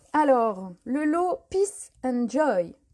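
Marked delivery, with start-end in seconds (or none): 1.5-2.7 put-on English accent. Announcing that a product set is leaving, saying its name in an english accent. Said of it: "avec mon super accent anglais".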